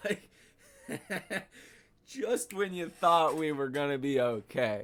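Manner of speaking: words broken up by laughter. Reacting to the news of a likely recession, laughing while talking. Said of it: "I'm laughing".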